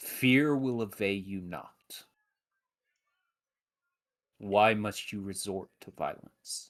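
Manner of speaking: soft, gentle, mild and soothing voice. Game master voicing a figure who speaks to the attacking players, in a soft voice. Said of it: "you hear a soft voice go".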